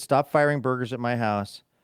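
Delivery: ordinary delivery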